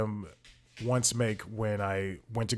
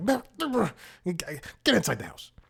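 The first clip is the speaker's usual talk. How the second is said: put-on fed-up scolding, high and swooping; 8 semitones higher than usual. Retelling ordering him inside after the vomiting: imitating own scolding, not loud. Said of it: "I don't scream at him loud".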